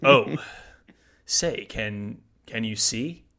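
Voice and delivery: dramatic, halting spoken-word delivery. Joking about an anthem performance, in a William Shatner impression. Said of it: "William Shatner to do the national anthem".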